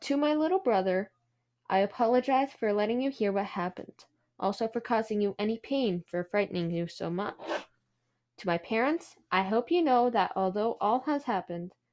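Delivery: ordinary talk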